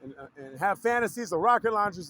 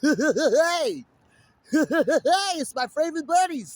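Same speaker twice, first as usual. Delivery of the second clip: loud, high belting with "hey" drawn out; 7 semitones higher, 5 dB louder than usual. Speaker tries out another voice after a first impression, doing a Krusty the Clown voice. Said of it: "if I had Krusty the Clown's voice".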